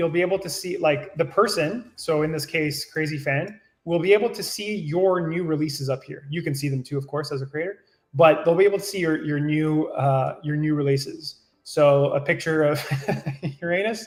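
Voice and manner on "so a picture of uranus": slow speech, laughing and giggling through it. Describing a new release shown on screen, laughing while talking. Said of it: "I can't say that without laughing".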